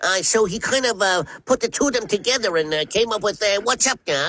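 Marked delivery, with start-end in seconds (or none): 3.6-4.3 scrappy cartoon rabbit voice with Brooklyn accent. Explaining how a cartoon voice was created: Bugs Bunny voice. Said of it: "they showed him a picture of Bugs Bunny".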